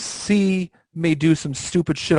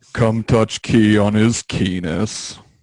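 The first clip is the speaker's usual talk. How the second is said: put-on gloomy donkey voice, lower pitch; 7 semitones lower than usual. Asked to do a cartoon voice like in a video: Eeyore voice. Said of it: "I don't remember the last time I tried doing an Eeyore voice".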